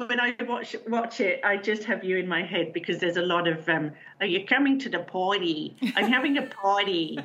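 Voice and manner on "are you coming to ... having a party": poor Long Island accent. Imitating the accents in something you watch, in a terrible Long Island accent. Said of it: "that was terrible, Long Island".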